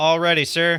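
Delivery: shouting. Voicing a ship's navigator calling out to the captain: navigator yelling. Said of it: "You hear the navigator yell out".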